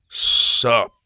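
forced, unnaturally deep put-on voice. Reading a story, a character answers a greeting in an unnaturally deep voice. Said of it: "he replied unnaturally in his deep voice".

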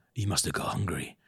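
bone-dry deadpan, hushed and breathy whisper. Quoting Loomis saying the dogs were eaten: imitating Loomis's deadpan delivery. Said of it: "So deadpan".

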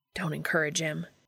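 plain

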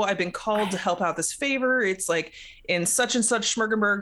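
plain

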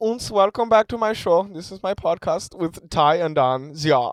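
put-on Germanic-sounding Finnish accent. Podcast hosts joke about how Finnish people talk: mock Finnish accent. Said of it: "I'm not even going to try to do the accent".

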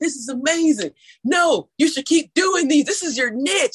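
loud, high, excited voice. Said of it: "he's like".

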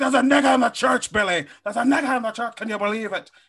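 belted out high, like an impression. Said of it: "my Gangs of New York impression".

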